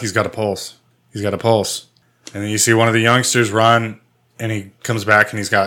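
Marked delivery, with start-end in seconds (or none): none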